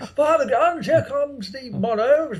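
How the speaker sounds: very high, shrill screaming in a posh English accent. Imagining all three of them on a Let's Play, screaming in posh English accents. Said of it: "in our most brilliant posh English accents".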